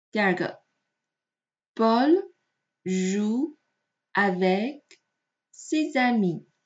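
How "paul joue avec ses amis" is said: slow reading, one word at a time.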